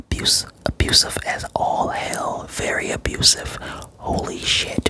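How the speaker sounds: soft, unvoiced, shocked whisper.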